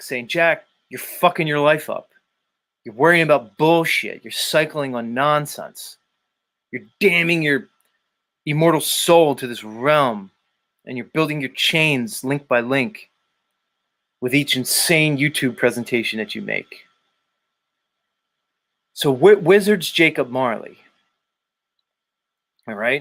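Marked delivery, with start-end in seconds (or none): none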